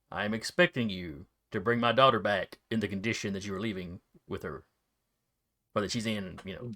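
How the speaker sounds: grave, low, serious tone. Voicing a mother sending her daughter off: serious mother's warning. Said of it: "She gives you a very, very, not stern, serious look".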